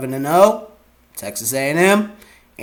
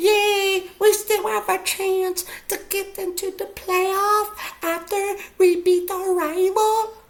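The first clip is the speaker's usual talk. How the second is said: giddy fan squeal and cheer, very high; 4 dB quieter than usual. Talking about rivalry week, doing an impression of a crappy Michigan fan. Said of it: "That was my impression of a crappy Michigan fan".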